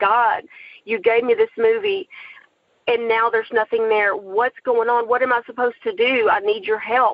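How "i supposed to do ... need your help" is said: ordinary talk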